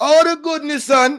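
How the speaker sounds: put-on Jamaican accent, pitched very high. Trying out different accents one by one, doing a Jamaican accent. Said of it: "Let me see the Jamaican".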